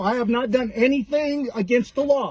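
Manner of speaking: ordinary delivery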